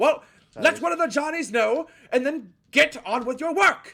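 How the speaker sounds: very high-pitched, shrill, barked yelling. Voicing a gnome ordering the players back to work: yelling gnome foreman. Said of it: "yells at you to get the fuck back to work".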